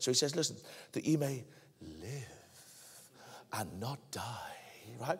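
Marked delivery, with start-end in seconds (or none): 0.9-4.5 soft, subdued serpent voice. Speaking to an audience, quoting a line in the voice of the serpent. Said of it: "It's the voice of the serpent".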